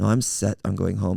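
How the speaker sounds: normal talking voice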